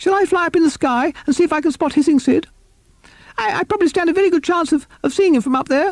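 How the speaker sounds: very high, squeaky, halting bat-like voice. Reading a story aloud, Bat offering to fly up: high, squeaky voice. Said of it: "spoke in his high, squeaky voice".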